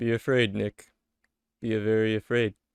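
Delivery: flat, expressionless delivery. A friend warns Nick about the new baby, deadpan delivery. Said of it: "the most deadpan delivery".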